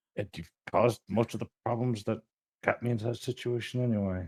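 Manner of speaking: very quiet mumble, muttered under the breath. Answering the uncle in character, muttering to oneself. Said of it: "I mutter to myself".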